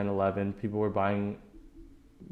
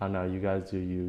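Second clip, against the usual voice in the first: normal talking voice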